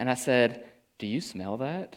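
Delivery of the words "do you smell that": discreet, soft, very quiet and hushed half-whisper. Retelling asking a question quietly in a hallway: imitating a half-whisper. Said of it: "I just kinda whisper to Alyssa".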